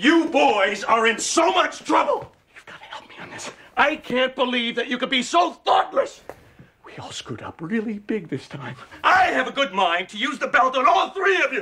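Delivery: high-pitched shouting. Addressing the boys, who ask why they are being yelled at; yelling. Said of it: "Why are you yelling at us?".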